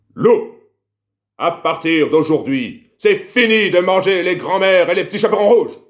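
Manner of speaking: big, shrill, booming gruff voice, very loud angry bellow. Telling a story, voicing the hunter scolding the wolf: hunter's big angry voice. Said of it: "J'ai bien la voix de fâché".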